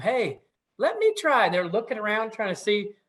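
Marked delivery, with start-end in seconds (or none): 0.0-1.5 tiny, high, squeaky voice, slow and unhurried. Storyteller voicing Jesko calling out to the worried animals: little squeaky voice. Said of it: "this little squeaky voice that kind of says to them".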